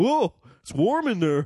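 high teasing caricature voice. Retelling a line Dave said, imitating him: Dave voice. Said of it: "said it in the Dave voice that we make fun of".

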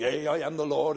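mock archaic old English church-style speech. Imitating a churchgoer copying the prophecy: imitating old english prophecy. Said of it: "get up in an old English and he goes".

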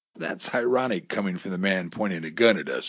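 ordinary delivery

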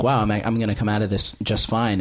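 ordinary delivery

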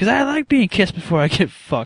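put-on very high, loud, swooping yell. Retelling a cartoon scene in a store, imitating Cartman yelling. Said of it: "yelling this in front of, like, all the people".

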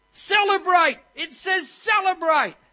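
shrill, very high, very loud panicked fretting cry. Telling a joke about a fretting monk, acting out his panic. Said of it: "he's just fretting and he's panicking".

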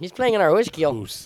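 Chicago accent, put on and played for fun. Joking with friends, asked what the voice is: put-on Chicago accent. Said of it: "you're doing some Canadian accent".

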